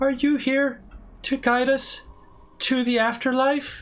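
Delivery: very high, deliberately poor, bad dub acting. Retelling a game scene, imitating a poorly acted girl ghost on purpose. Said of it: "I'm intentionally doing it poorly".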